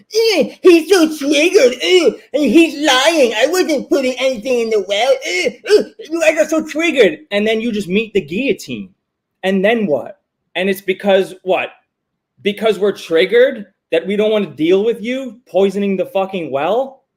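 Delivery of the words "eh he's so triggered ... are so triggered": taunting, mocking voice, pitched up. Acting out an accused person at court, mocking imitation. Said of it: "You're gonna be there at the court going".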